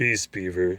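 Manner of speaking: deep, low growl. Narrator reading a story, Aslan hushes Mister Beaver: Aslan's very low growl. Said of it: "with a very low growl".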